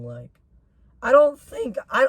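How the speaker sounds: very high voice, cracking and breaking up. Complaining about being punished for so-called misbehavior, with a cracking voice. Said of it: "my voice crack".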